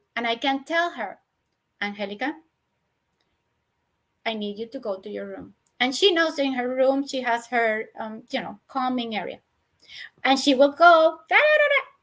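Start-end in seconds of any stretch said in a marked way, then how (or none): 1.8-5.5 soft, low, firm, even tone. Adult describing handling a screaming girl, sending her to her room, retelling a low, firm voice. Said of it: "I keep my tone of voice low, as low as possible, but firm".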